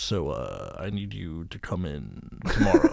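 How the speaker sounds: voice dropped deep and taken slow. Imitating a work HR guy, as an American Alan Rickman. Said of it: "Were you trying to do Alec Rickman".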